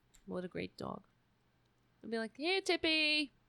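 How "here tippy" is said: high-pitched, calling-out voice. Retelling calling a childhood dog, imitating calling a dog. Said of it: "When I used to call my dog".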